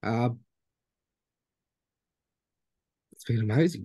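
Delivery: tearful, teary voice, already teared up. Sharing what the Dream Trips family's support meant, already teared up. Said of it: "already teared up already".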